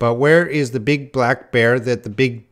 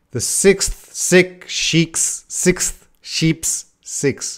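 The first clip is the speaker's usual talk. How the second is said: slow, careful, deliberate word-by-word delivery; 5 semitones higher than usual. Attempting a hard tongue twister for listeners, saying it too slow. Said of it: "but I'm too slow".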